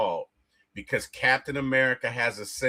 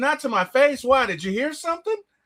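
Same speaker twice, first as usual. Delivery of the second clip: play-acted very high taunting, daring tone; 12 semitones higher, 4 dB louder than usual. Praising a film's dialogue, the speaker acts out Wanda's reply: acting out Wanda's daring tone. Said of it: "the way she said it is kind of like, I dare you to say it".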